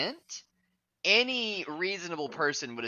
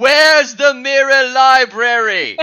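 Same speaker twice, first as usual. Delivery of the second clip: shrill, booming, very loud, high, drawn-out furious shout; 10 semitones higher, 18 dB louder than usual. Imagining Gordon Ramsay running through this house: imitating Gordon Ramsay shouting. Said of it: "running through this house shouting".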